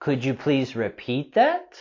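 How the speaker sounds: pitch climbing upward on "that". Practicing a question, rising intonation on that. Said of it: "we're going to have our rising intonation here with this question".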